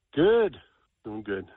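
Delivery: low-energy, down-sounding, a little depressed voice. Radio caller answering the hosts' greeting, sounding a little depressed. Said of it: "You sound a little depressed".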